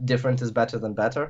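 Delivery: ordinary delivery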